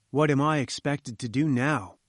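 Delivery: plain reading voice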